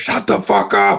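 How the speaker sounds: put-on yell, high, loud, slow. Speaker retells the dad on the phone yelling at someone honking: retelling dad's yell. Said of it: "now he's like yelling in my ear".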